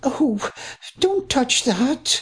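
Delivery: very high, wavering, quavering, pleading. A woman tells a rude officer not to touch anything, quavering voice. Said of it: "her voice again quavering".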